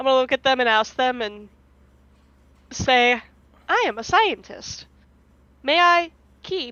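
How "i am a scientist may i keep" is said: broken, choppy mimicry, high-pitched and slow. A Kenku who can only mimic words asks others something, in broken Kenku mimicry. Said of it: "in the broken Kenku mimicry".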